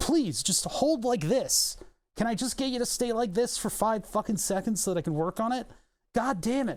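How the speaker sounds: frustrated, fed-up voice. Pleading with a tilting part while working on it: frustrated. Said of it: "I'm getting frustrated with this thing".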